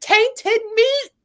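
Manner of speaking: acted scream at a very high pitch. Retelling a show scene where a bitten character screams: imitating someone screaming. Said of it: "he was screaming".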